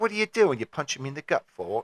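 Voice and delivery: put-on Australian accent, put on. Quoting Chopper's reply after being stabbed: Australian accent as Chopper. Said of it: "I lost my Australian there".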